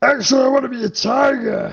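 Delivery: very high, resounding, booming voice. As the party boards, an unseen voice calls out, in a booming voice. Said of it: "you do hear a booming voice".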